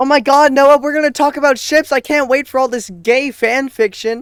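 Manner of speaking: very high, very loud, very slow fake excitement. Acting excited about the video after being asked to: fake excitement. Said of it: "Act excited".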